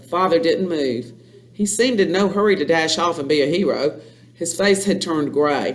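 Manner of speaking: ordinary delivery, nothing marked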